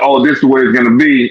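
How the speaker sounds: ordinary delivery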